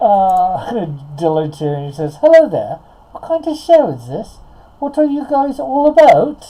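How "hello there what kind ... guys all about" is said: put-on British accent, high pitch and loud. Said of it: "doing a British accent for John".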